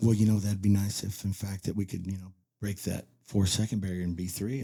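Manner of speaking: soft, mild, hushed, quiet, soft-spoken voice. Recounting a record run, the speaker quotes Doyle, imitating Doyle's quiet voice. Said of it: "He talks real quiet".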